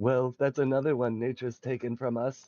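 level, even, flat voice-assistant monotone. Delivering a Smurfette joke to co-hosts, in an Alexa voice. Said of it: "you're doing it in the Alexa voice".

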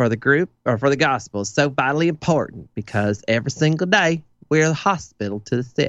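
put-on southern preacher voice, spot-on accent. Doing a voice that a listener calls a spot-on accent. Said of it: "The voice that you're using pretty much is like spot on accent".

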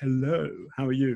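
laid-on, put-on upper-class English accent. Speaker with a slight Northern accent shows they can also do posh accent. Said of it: "but I can also do posh".

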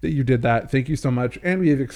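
ordinary delivery

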